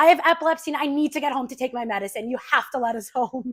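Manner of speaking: shouting loudly. Retelling a passenger shouting to the police from the back row, retelling a shout. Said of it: "he just shouts from the back row".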